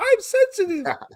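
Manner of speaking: very high, squeaky little voice. Joking about how the Brawny Paper Towel Guy talks, squeaky Brawny Paper Towel Guy voice. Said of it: "he has a high squeaky voice".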